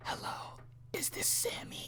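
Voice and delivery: very quiet, breathy whisper. Imitating a man whispering alone in his house: imitating someone whispering. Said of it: "he's probably whispering to himself".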